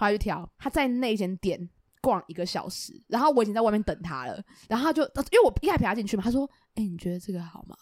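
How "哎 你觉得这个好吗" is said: put-on barely audible mumble, lower, quieter. Retelling what a quiet-voiced friend asked in a shop: imitating someone mumbling quietly. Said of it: "大家会觉得听不到，他就是真的听不到".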